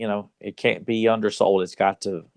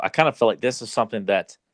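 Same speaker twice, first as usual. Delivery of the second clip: ordinary talk, nothing marked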